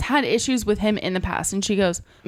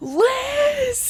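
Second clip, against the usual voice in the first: put-on very high, long, drawn-out shrill shriek. Retelling how a coworker screamed a name through the fitness center: imitating a coworker screaming. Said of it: "she literally screams through the whole fitness center".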